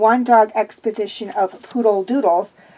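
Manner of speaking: usual speaking voice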